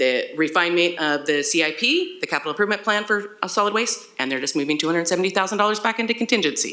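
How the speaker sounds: rushed, rattled off at very fast speed. A presenter at a meeting rushes through their last slide, talking very fast. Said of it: "I might have said that as fast as I possibly can".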